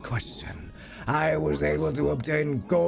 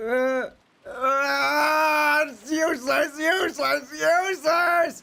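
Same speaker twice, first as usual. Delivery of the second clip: play-acted very high, slow, drawn-out weepy blubbering wail; 12 semitones higher, 3 dB louder than usual. Predicting a character's reaction to a choice: imitating Battler crying. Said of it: "he's gonna start crying".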